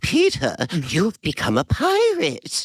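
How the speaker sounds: very high, slow, drawn-out put-on character voice. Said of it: "I had to mutter underneath my breath".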